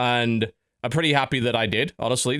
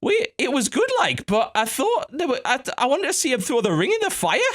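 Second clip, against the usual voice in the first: put-on very high-pitched girl voice, broad Geordie accent; 13 semitones higher than usual. Retelling a remark from a girl from Newcastle behind them, in a broad Geordie accent. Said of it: "in this wonderful broad Geordie accent".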